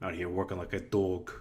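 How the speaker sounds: put-on full New York accent, laid on. Quoting what the speaker's dad used to say, in a full New York accent. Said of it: "my dad used to say in like a full New York accent".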